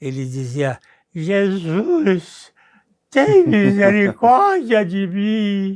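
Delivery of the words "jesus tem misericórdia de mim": play-acted slow drunken voice with words stretched out. Retelling a drunk man's prayer on the road: imitating drunk speech. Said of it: "ele contava com seu sotaque de bêbado".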